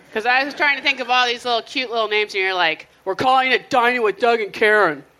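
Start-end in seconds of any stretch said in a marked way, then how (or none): 3.1-5.0 acted, really mean-sounding tone on final word. Retelling a cohost naming the show: imitating a mean tone. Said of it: "Like that real mean".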